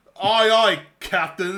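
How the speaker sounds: put-on Cockney voice. Acting out a soldier reporting to the general: Cockney accent. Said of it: "some dude with a Cockney accent".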